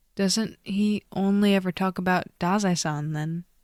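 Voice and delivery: ordinary delivery, nothing marked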